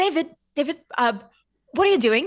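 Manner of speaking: high scolding voice. Asking another character what he is doing, in a voice for scolding a cat. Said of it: "that was the voice I just gave".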